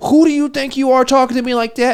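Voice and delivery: acted, very high, furious, temper-lost voice. Retelling how a woman at a loud table reacted: imitating a woman losing her temper. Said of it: "And they fucking lose it".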